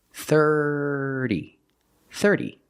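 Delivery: thirty, first syllable thir stressed. Showing learners how to say the word: stress on THIR in thirty. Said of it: "Put the stress on the first syllable".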